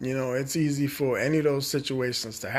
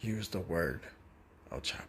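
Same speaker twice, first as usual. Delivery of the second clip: hushed, very quiet whisper; 8 semitones lower, 12 dB quieter than usual. Giving the audience a warning, talking quietly. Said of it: "as I'm talking quietly right now".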